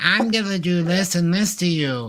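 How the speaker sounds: feeble, high, wimpy English-dub voice. Comparing cartoon dubs, imitating the English voice actor: imitating a wimpy guy's voice. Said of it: "some wimpy guy's voice that's like".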